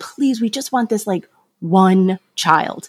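put-on pleading, begging voice. Recalling a plea to heaven for one child, retelling their own begging. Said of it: "like begging".

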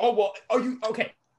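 mock slow pained voice, words squeezed out. Imitating another speaker's reaction: imitating someone sounding pained. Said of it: "and you're pained, and you're just like".

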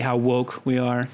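usual speaking voice

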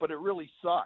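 normal talking voice

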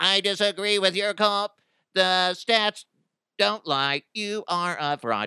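robotic, high-pitched monotone. Imagining him disagreeing with someone's call, for amusement: robotic Zuckerberg voice. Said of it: "he talks like he'd be so robotic".

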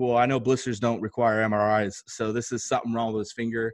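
ordinary talk, nothing marked

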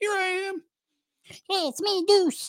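very high, slow little voice. Acting out a tiny player facing a linebacker: imitating Deuce Vaughn. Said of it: "he doesn't talk like that, though".

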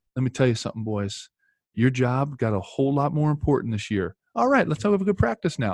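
imitated North Carolina accent. Retelling what he told the boys before practice, imitating a North Carolina accent. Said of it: "North Carolina accent".

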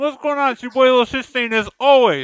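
very high, very loud talking with mouth full. A gaming show co-host introduces himself after work, talking while eating. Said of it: "We just feasting out here".

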